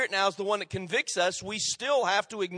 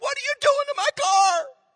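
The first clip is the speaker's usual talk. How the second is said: play-acted, very high-pitched screaming outcry; 4 dB louder than usual. Retelling a story about an onlooker whose car was wrecked: imitating a man screaming. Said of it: "one guy started screaming".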